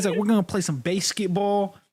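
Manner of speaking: heavy, put-on Pennsylvania accent laid on thick. Retelling how a dude talked about playing basketball, imitating a most Pennsylvania voice. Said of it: "this dude was the most Pennsylvania".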